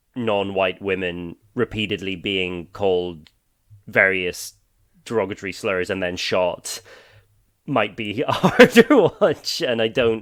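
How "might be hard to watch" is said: laughing through words, higher and louder. Giving listeners a warning about a film, laughing while talking. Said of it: "I'm laughing".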